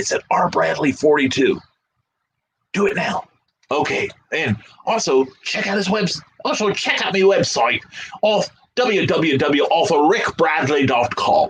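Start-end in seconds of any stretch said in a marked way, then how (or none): 6.4-11.5 put-on, affected upper-crust posh accent. Reading out an author's website address for listeners, in a posh accent. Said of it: "There was a posh accent for you".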